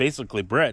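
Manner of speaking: plain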